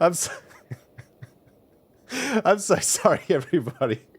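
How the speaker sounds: talking through laughter. Apologizing to everybody after accidentally running an ad, laughing while talking. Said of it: "that made me laugh".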